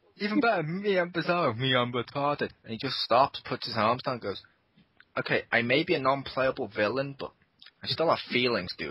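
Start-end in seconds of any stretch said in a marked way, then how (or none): none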